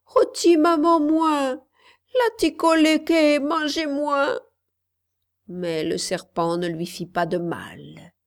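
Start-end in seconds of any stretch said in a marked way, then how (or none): 0.1-4.4 high-pitched, terrified crying out. A narrator reads a little girl's cry as a big snake appears, terrified cry. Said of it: "Elle eut tellement peur qu'elle crut mourir, et elle s'écria".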